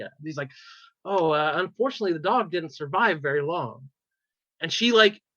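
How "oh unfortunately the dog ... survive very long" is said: usual speaking voice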